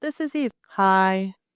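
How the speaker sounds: low, slow, bored, world-weary listless drawl. Retelling how another person voices her, in a mock-bored ennui voice. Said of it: "You made me sound like ennui".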